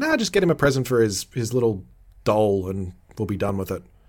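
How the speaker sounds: ordinary talk, nothing marked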